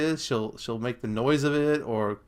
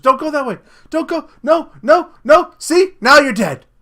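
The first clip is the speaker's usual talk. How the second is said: mock excitement, higher and louder; 13 semitones higher, 12 dB louder than usual. Retelling what she said to a girl in a Halloween movie: imitating excited warning. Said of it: "She's getting all excited".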